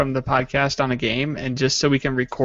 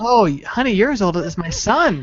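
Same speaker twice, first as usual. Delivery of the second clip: pitched-up flirty voice; 7 semitones higher, 4 dB louder than usual. Suggesting a line for a player to use in the game, put-on cougar flirting with youngins. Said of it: "pretend to be a cougar hitting on some youngins".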